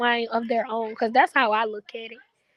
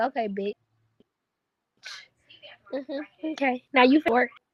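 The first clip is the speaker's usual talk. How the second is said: play-acted suspicious, knowing, unconvinced tone. Acting out a woman staring at the wall as her partner leaves for work: imitating a suspicious woman.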